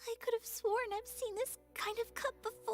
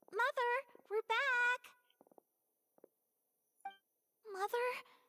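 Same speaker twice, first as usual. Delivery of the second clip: voice pitched higher than normal. Acting a scene returning home to find mother: higher pitched voice. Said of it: "using the higher po-, higher pitched voice for this".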